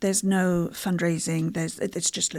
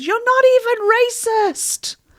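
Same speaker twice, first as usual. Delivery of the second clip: very loud, high, shrill, dragged-out screaming; 10 dB louder than usual. Retelling what she shouted while being dragged out: imitating someone screaming. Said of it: "as she was dragged out screaming".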